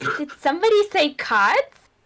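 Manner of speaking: small, high-pitched little goblin voice, calling out. A little goblin calls up from below the group, little goblin voice. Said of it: "this like little goblin kind of jumps up".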